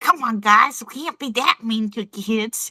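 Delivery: put-on nasal granny voice. Telling the others not to be mean to kids: nasal voice. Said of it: "You sounded so, so nasally".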